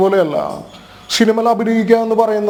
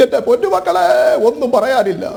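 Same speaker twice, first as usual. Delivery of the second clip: put-on high-pitched doting mother voice. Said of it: "മല്ലികാമ്മയുടെ ഞാനൊന്ന് വേണമെങ്കിൽ ഒന്ന് ട്രൈ ചെയ്യാം".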